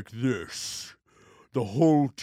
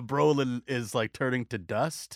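ordinary talk, nothing marked

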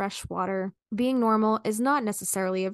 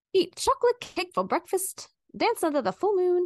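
put-on, pitched-up old-Hollywood transatlantic accent; 9 semitones higher than usual. Speaker reads a list of advice aloud to the others, in a transatlantic accent. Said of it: "I'm just going transatlantic with it".

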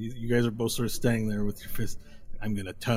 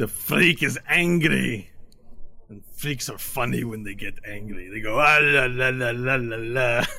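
put-on drunk, louder; 2 semitones higher, 4 dB louder than usual. The lead tiefling looks to his friends and speaks, drunk tiefling leader. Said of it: "They look already kind of toasty and glowy. / And he takes off his jacket and reveals like a large, muscly chest. / And then the lead tiefling looks at you and he goes, / And the guy sort of sways a l".

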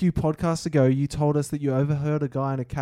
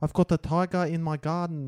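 mock South African accent, higher pitch; 3 semitones higher than usual. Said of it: "let us know what you thought of our accent".

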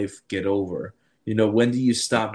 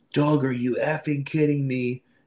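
imitated scream, yelped up high; 5 semitones higher than usual. Telling a story about waking up, imitating the speaker's wife screaming. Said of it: "my wife screaming".

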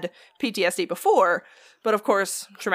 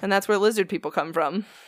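ordinary talk

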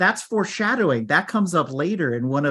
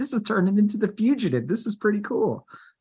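thrilled, swept-up, excited, pitched-up voice; 6 semitones higher than usual. Retelling their own reaction while someone dodged around, getting excited. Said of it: "and I got excited".

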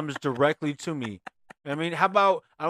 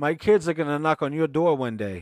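fake, full-swing Boston accent; 3 dB louder than usual. Friends riffing on a bit, one talking in a put-on Boston accent. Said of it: "I don't know where that accent comes from".

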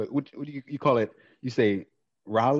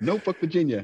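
put-on Jamaican accent, pitched up higher; 6 semitones higher than usual. Retelling what a concert performer said on stage: imitating a Jamaican accent. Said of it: "like, Jamaican or something like that".

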